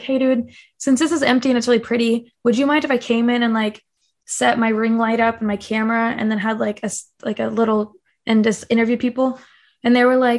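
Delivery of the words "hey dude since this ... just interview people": ordinary talk, nothing marked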